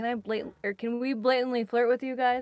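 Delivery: sarcastic tone for effect. Retelling how he asked to flirt with them, imitating a sarcastic tone.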